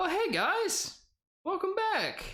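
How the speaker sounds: very high, slow, drawn-out sing-song. Voicing the magic salesman just woken, greeting the party: voicing Miris the magic salesman. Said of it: "the magic salesman".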